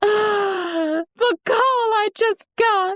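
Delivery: frantic voice, very high pitched and very slow. Retelling a woman's panicked call to someone, imitating a frantic woman. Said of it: "I like all the different voices you're doing".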